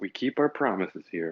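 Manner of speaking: very deep, low muttered voice. In a game scene, a character speaks as a captive is dragged away: muttered. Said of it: "like in a very kind of muttered way".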